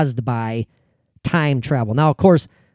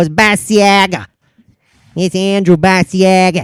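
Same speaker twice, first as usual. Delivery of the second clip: put-on Chicago accent, Chicago-style pronunciation; 4 semitones higher than usual. Showing how someone from chicago would say the name, chicago accent. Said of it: "if you're from Chicago".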